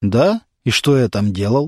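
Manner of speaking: ordinary delivery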